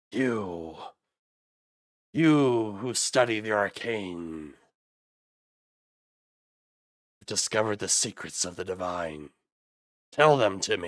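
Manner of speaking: undead walking-corpse voice. Narrating a shambling corpse stepping toward the player, in an undead corpse voice. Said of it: "the corpse takes like one shambling step".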